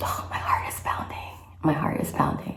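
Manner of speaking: hushed whisper. Waiting minutes for pregnancy test results, whispering. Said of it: "And here I am whispering".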